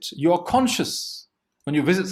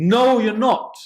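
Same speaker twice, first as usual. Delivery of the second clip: teacher voice turning angry; 5 semitones higher, 5 dB louder than usual. Retelling a teacher warning a student just before the exam, mock-angry teacher tone. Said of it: "he takes on an angry tone and says".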